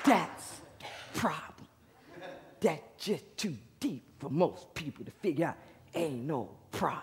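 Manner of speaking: put-on raspy whisper. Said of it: "he's like this".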